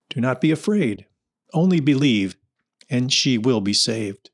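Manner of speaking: ordinary delivery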